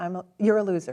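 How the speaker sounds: plain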